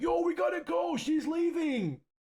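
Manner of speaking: very high, drawn-out scream. Retelling a kid in a theater calling to another kid: imitating someone screaming. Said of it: "screaming across the theater to this kid".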